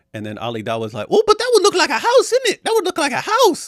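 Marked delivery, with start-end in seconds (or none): 1.0-3.6 put-on very high, loud little kid voice. Retelling a debater's reply about shapes: imitating Ali Dawah sounding like a five-year-old. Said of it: "he sounds like a five-year-old watching Sesame Street".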